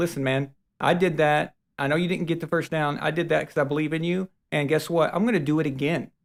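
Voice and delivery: plain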